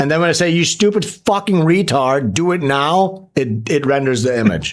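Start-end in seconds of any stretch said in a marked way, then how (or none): 0.5-3.3 put-on slow, angry, hostile, abusive tirade. Retelling what they say when an image generator refuses: imitating own angry abuse. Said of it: "I'm abusive".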